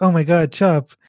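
ordinary talk

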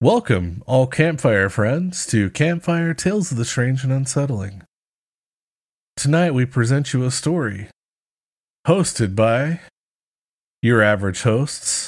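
pleasant, smooth public-radio host announcer voice. A podcast host opens the episode for listeners in an NPR voice. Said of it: "Fucking nice NPR voice".

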